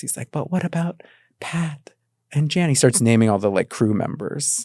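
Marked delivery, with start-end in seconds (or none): 0.3-2.7 small, cute, high-pitched little voice. Retelling a canceled little chef character's reaction: Tiny Chef's cute voice. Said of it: "he has kind of a cute voice".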